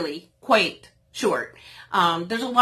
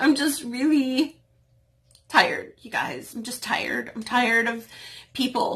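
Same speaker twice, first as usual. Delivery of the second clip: halting, breaking voice, fighting off crying; 3 semitones higher than usual. Speaker asking viewers to help with their moving sale, holding back tears. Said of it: "I'm not going to cry".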